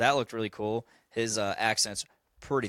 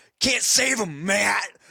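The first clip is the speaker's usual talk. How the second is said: exaggerated, thick, slow delivery, pitched up; 11 semitones higher, 6 dB louder than usual. Acting out the Punisher speaking to Matt in Daredevil, do a Punisher impression. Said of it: "does the best impression of that".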